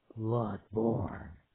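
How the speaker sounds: put-on game announcer voice. Saying the title of the game, in the Resident Evil announcer voice. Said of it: "I was doing that voice that's from Resident Evil franchise saying the title".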